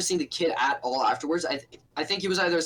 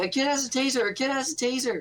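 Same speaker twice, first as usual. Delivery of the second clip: play-acted high shouting schoolkid voices; 8 semitones higher than usual. Recounting a class when kids yelled about a taser, imitating the kids yelling. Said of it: "kids were yelling".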